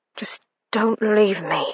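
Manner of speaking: soft, breathy half-whisper. Reading a romance scene aloud, a man begs his love to stay: half-whispering. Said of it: "he whispered".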